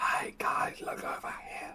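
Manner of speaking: subtle, whispered delivery. Playing a character calling the group over without yelling, subtle call. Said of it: "I try my best subtle".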